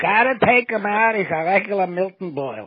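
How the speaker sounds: put-on thick Yiddish accent. Retelling what a teacher told the mother: imitating teacher's thick yiddish accent. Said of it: "a thick Yiddish accent".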